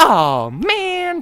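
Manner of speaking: very high, loud, stretched-out cartoon squeal. Imitating a disappointed "oh man" in a Dora the Explorer voice. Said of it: "Just full, like, Dora the Explorer".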